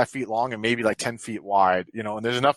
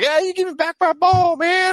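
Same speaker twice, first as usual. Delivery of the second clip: put-on very high, loud, young Texan kid accent; 6 dB louder than usual. Describing what kids fighting over a ball sound like, in a young Texan kid accent. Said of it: "this young Texan accent".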